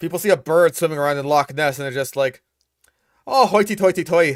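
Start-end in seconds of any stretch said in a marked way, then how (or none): 3.3-4.4 fake Irish accent, higher. Voicing people who spot a bird swimming in Loch Ness, in a put-on Irish accent. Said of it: "that's that's Irish, isn't it?".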